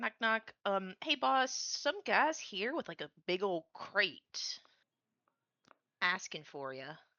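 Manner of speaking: lighthearted, jokey, playful acted delivery. Knocking on the boss's door as a joke: playful joking in character. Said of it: "do a joke knock".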